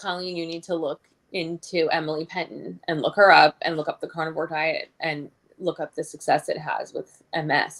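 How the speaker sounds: plain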